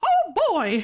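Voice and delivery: famous cartoon mouse character voice. Answering praise by doing another line: Mickey Mouse voice. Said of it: "I can kind of do a Mickey".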